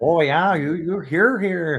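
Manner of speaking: put-on heavy Wisconsin accent, laid on thick. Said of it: "the thick accent that it's like".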